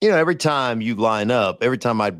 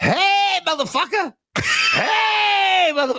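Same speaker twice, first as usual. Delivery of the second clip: put-on, imitated screaming, higher pitched. Retelling a player yelling across the field after a play: Lawrence Taylor screaming. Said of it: "Lawrence Taylor screaming at me".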